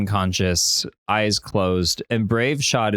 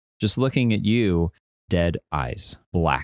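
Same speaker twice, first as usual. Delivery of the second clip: plain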